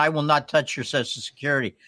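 ordinary delivery

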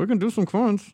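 put-on voice like talking into a cup. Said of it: "It's like you're talking into a cup".

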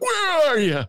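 very high-pitched, thin voice. Retelling a phone call, imitating Dennis asking where they are. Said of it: "It's not how I sound".

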